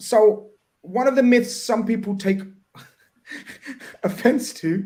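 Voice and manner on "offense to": slow, laughing delivery. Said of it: "I'm laughing".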